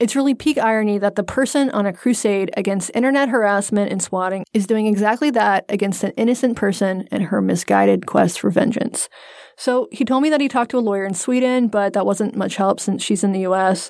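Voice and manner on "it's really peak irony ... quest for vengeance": usual speaking voice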